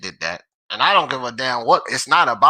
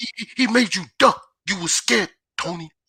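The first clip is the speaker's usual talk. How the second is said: higher-pitched teasing voice, tripping over words; 7 semitones higher than usual. Teasing Tony in front of friends, doing an MMA champ impression. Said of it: "That's my M M A champ impression".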